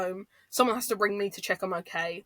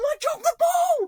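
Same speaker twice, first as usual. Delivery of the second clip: mock very high, very loud scream; 5 dB louder than usual. Retelling heckling players from the sideline after a heavy loss: retelling own past screaming. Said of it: "I'm screaming at the D Bs".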